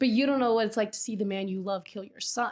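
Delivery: ordinary delivery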